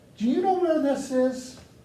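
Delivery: very high, shrill, loud yell. Recalling being lost and asking a french lady for directions: retelling a yell. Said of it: "And I yelled it".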